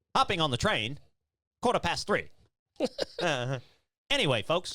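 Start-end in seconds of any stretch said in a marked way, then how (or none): 0.2-2.3 old-time, put-on transatlantic accent. On a podcast, just asked about the put-on voice, speaking in a transatlantic accent. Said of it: "Is that your is that your transatlantic um fucking voice?".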